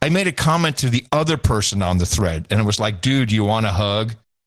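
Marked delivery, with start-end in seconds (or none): 3.0-4.1 put-on condescending tone, much lower. Quoting own comment to another person on a Mastodon thread, retelling own condescending tone. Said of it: "That was my condescending tone".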